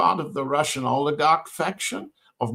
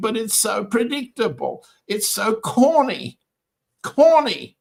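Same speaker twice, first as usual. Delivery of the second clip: laughing through words, pitched up; 7 semitones higher than usual. Describing Mister Dmitriev's peace proposal, the speaker keeps laughing while talking. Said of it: "I'm sorry I'm laughing".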